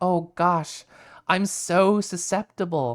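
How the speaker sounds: very slow, dazed, entranced drawl. Retelling playing along with a hypno bit in vr chat: playing hypnotized. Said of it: "played along with the Hypno bit".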